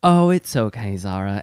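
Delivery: very bad, clumsy fake British accent, slow. Retelling what a man said to a woman: very bad British accent. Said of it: "in a very bad British accent".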